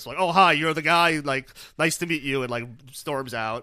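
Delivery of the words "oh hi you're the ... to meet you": high, loud, pissed-off yell. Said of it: "yells in, uh, Dean's face".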